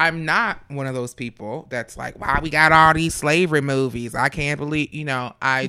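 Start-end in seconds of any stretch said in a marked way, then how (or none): 2.2-4.9 raised, griping, complaining voice. Imitating people who complain about slavery movies: imitating complaining people. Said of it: "Thank you for doing that voice".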